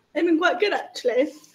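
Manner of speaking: sounding surprised. Asked how the first week back has gone, surprised. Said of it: "You sound surprised".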